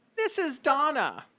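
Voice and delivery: put-on older woman's voice. Someone picks up the phone and answers the caller, Donna's older woman voice. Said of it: "the voice of an older woman".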